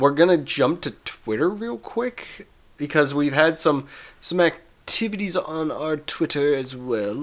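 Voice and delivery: slipping into a vaguely English accent. Podcast host moving on to the show's Twitter activity, randomly doing an English-ish accent. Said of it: "I'm randomly doing an English-ish accent".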